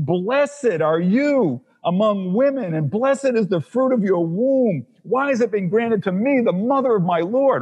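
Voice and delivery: loud joyful exclamation. Acting out Elizabeth greeting Mary: Elizabeth exclaiming with a loud voice. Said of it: "she's rejoicing with a loud voice".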